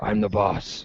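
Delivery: low, gritty, gravelly, hushed rasp. Speaker explains his voice went gravelly, redoing it as a Jack Bauer gravelly voice. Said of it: "It almost was like".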